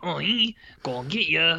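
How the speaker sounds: put-on French accent. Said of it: "he's talking with a French accent".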